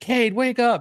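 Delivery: very high, urgent shouted yell. Hooked to a fish, the speaker re-enacts yelling at the sleeping kid: retelling a yell. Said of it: "I'm yelling".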